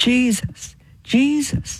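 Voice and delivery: high-pitched crying out.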